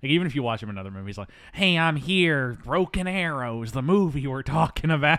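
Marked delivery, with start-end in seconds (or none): 1.5-5.2 slimy put-on voice, higher and louder.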